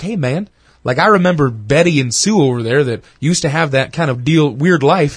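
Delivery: ordinary delivery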